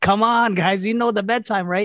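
imitated screaming. Retelling telling the kids they passed bedtime: imitating own screaming.

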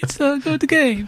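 over-the-top Italian grandma accent, very high pitched. Saying it's a good game like an Italian nonna, exaggerated Italian accent. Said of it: "Why do we keep saying it that way? Like the Italian nonna".

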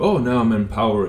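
ordinary talk

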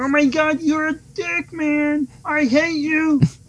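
squeaky frog-puppet voice, very high, slow, stretched. Pretending Kermit has escaped and is shouting at the other speaker: Kermit voice.

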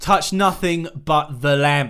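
loud, real Cockney London street-style accent. Imagining a Cockney-style Aladdin remake, voicing a line from it: Cockney accent. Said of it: "everyone had like real Cockney accents".

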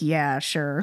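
put-on sarcastic "yeah". Imitating how a spirit's answer might sound: imitating a sarcastic reply. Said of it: "it sounded sarcastic".

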